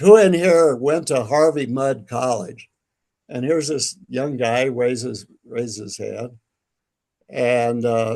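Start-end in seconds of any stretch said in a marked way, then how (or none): 0.0-2.7 raised, loud call-out carrying across the room. Walking into a restaurant, he calls out to everyone inside in a loud voice. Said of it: "I say in a loud voice".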